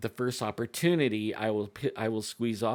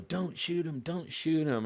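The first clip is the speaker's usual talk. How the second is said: put-on yell, pitched higher; 6 semitones higher than usual. Retelling a hunt, the buddy shouting not to shoot: imitating a buddy yelling. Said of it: "My buddy starts yelling".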